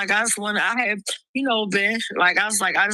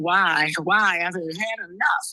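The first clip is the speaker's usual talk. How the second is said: slow, tearful, sobbing, crying voice; 2 semitones lower than usual. Retelling own reaction to seeing the car towed away: retelling own crying. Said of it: "And I'm there crying".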